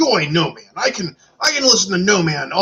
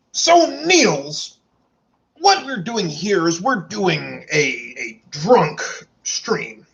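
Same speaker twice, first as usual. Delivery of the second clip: slow, put-on imitated voice, playful. Explaining the drunk stream to Niels, in the Adrian Pius voice. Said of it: "I'm gonna do it in the Adrian Pius voice because it entertains me".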